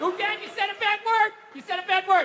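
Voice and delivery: put-on very high little-girl tattling voice.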